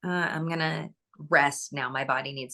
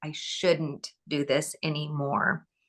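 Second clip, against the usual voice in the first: plain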